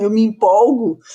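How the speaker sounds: ordinary talk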